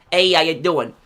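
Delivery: loud put-on, attempted New York accent. Announcing he will play Tony Cipriani and trying out the voice: Tony Cipriani New York accent. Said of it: "I'm gonna try to do an accent".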